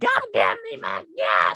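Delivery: furious, angry screaming with swooping pitch. Retelling a woman waiting at a busy gas station: retelling a woman screaming. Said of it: "she started screaming".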